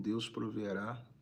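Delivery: plain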